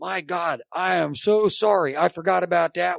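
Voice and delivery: mock heated half-shout, slow and mild. Retelling an argument where the man starts yelling back: retelling him yelling back. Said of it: "he's yelling back going".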